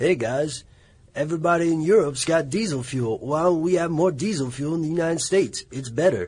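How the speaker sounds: particular loud, high-pitched way of talking. Podcast host poses a commonly heard question, imitating a cousin's voice. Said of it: "That's a fantastic voice".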